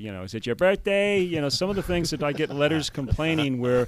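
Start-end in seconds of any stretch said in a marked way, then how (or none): 0.2-1.2 put-on higher-pitched Long Island accent. Speaker mimicking a priest who turns the Mass into his own show, in a Long Island accent. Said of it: "Long Island accent".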